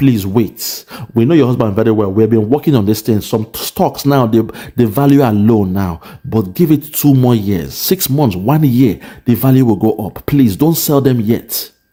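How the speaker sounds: usual speaking voice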